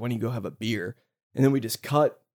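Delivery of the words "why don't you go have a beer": soft, under-the-breath muttered jab. Retelling a line from a film argument: imitating muttering under her breath. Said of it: "under her breath is like".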